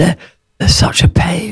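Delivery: whispered, fruity farmer voice.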